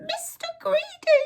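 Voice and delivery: very high, frightened squeaking voice. Reading a story aloud, Mister Greedy answers the giant's question with a squeak. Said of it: "he squeaked".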